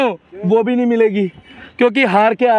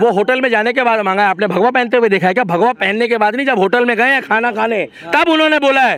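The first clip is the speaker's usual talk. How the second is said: ordinary delivery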